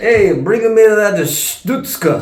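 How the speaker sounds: put-on Brooklyn accent. Asked to do Yiddish, sounding instead like Brooklyn: put-on Brooklyn accent. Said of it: "now he's from Brooklyn".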